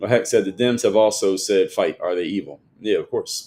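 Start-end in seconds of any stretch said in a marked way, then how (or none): none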